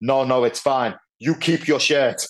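put-on German-accented English. Speaker retelling a man's reply after offering his own shirt, German accent. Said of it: "in his German accent".

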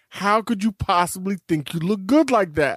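ordinary talk, nothing marked

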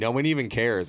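usual speaking voice

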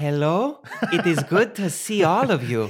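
English words bent by a fake Spanish accent. Speaker greeting the group as a joke; fake Spanish accent on English. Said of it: "emphasize my English words as if they're Spanish".

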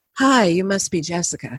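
low, rumbling, growly voice. Retelling being greeted by a woman at her apartment; imitating a growly woman's voice. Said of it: "she's like got this like growl of a voice".

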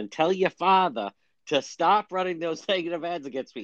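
put-on strong Boston accent. Retelling a debate, the speaker quotes Markey addressing Kennedy in a heavy Boston accent. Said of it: "And with the heavy Boston accent".

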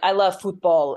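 mocking, fake put-on Spanish accent. Mocking people who put a Spanish accent on one word: imitating a put-on Spanish accent. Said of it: "they put the accent on it".

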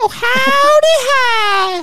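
very high cartoon voice, "hi" drawn out. Discussing South Park, a speaker quotes the Christmas poo in Mr. Hankey voice. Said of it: "That's how he does it".

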